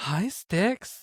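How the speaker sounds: mock starry-eyed, high, star-struck fangirl voice. Retelling meeting a TV figure at a convention: imitating own fangirling greeting. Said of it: "that was the only time I, like, fangirled".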